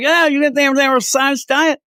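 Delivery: put-on thick, heavy Southern accent, very high pitch. Retelling what a guy at Walmart said about dog food: imitating a thick Southern accent. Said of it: "a thick Southern accent".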